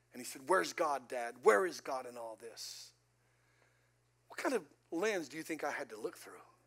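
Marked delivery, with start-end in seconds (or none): 0.5-3.0 low, slow, angry and demanding. A pastor retells what his twin son said, walking out after the accident; retelling son's angry question. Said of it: "he walked out of the room mad".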